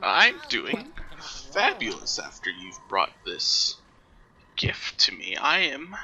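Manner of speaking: put-on croaky old hag voice, swooping pitch. The hag answers Amdos, who just introduced himself, in a croaking hag voice. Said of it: "the hag croaks".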